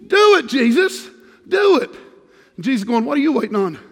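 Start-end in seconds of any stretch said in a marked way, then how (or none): 0.1-1.9 very slow, high-pitched, drawn-out put-on southern accent. A speaker repeats a phrase to an audience, now in a southern accent. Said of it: "That had my southern on it there".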